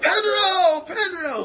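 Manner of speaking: very high, screaming cheer like a crowd. Telling a story, the speaker acts out a crowd cheering someone, retelling a crowd screaming. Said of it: "Everybody's screaming out".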